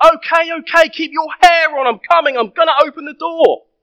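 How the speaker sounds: very high loud call. Retelling how the speaker's dad answered the door to the neighbour, retelling a loud call. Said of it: "says in a loud voice".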